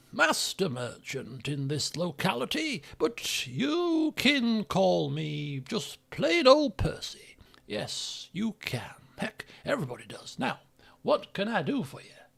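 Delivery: put-on short ghoul voice. Playing a ghoul merchant greeting a customer, in Percy Crump's short ghoul voice. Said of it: "a short ghoul".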